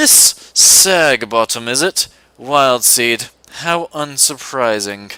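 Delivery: put-on slow British accent, every word stretched out. Voicing Snape, an older professor in a game scene: British accent for Snape. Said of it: "I have to do an accent for him".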